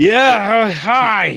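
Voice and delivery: put-on loud, clearly drunk man voice with drawn-out hi. A game master voices a drunk man opening the door to a visitor: drunk man's voice. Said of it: "a very clearly drunk Vistanian man".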